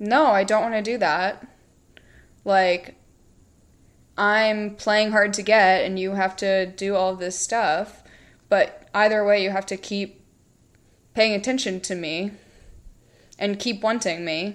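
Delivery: ordinary delivery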